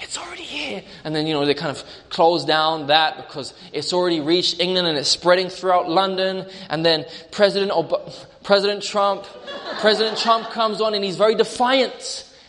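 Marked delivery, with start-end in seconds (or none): 0.0-0.8 high, soft, hushed aside. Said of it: "you see her little person on the side like".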